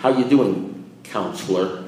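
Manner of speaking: play-acted, slightly scornful, derisive tone. Retelling how a sober AA member greeted the speaker as counselor, imitating derision. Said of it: "a little derision in his voice".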